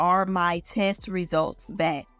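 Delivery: ordinary talk, nothing marked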